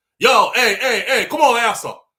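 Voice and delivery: loud, high-pitched Jamaican man hollering. Retelling a jamaican man calling the journalist over: imitating a jamaican man calling out. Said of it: "the Jamaican brother got grabbed the journalist".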